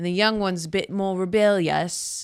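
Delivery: slipping into British accent. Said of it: "what was that accent?".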